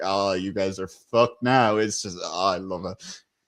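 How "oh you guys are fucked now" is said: put-on chuckling voice, lower. Retelling a favorite moment of the episode: imitating Mac chuckling. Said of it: "him just kind of just chuckling like".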